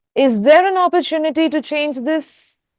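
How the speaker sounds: pitch climbs at the end on "this". Teaching beginners question intonation, rising pitch on final 'this'. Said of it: "It goes up because you're asking a question".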